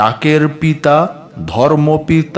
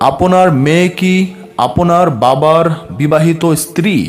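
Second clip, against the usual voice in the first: plain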